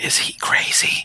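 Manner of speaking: whispered aside. A player whispers to another player's character during a tabletop game: whisper. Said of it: "I'm gonna whisper to James's character".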